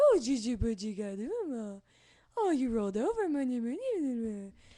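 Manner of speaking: put-on loud, sing-song baby talk. Explaining how people talk to babies, giving an example: baby talk voice. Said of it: "the baby voice".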